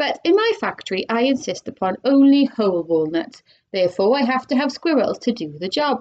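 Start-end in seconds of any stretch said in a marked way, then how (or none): none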